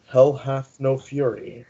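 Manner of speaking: muttered, murmured under the breath. The game narrator voicing Morin as a boy runs inside, Morin muttering under his breath. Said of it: "Morin's gonna mutter under his breath".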